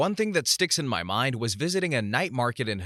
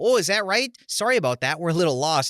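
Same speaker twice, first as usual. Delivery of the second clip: put-on Saskatchewan accent, folksy good old boy dialect; 6 semitones higher, 6 dB louder than usual. Retelling a reply to a police officer: Saskatchewan good old boy dialect. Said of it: "my best Saskatchewan good old boy dialect".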